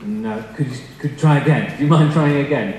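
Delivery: ordinary delivery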